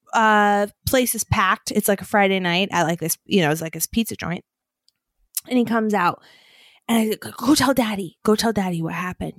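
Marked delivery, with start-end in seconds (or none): 7.3-9.4 acted, excited and eager tone. Parent retelling urging a child to go tell daddy, retelling excited urging. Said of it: "so excited".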